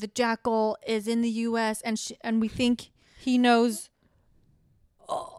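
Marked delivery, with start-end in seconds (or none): none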